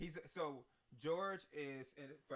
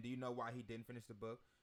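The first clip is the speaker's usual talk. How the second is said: usual speaking voice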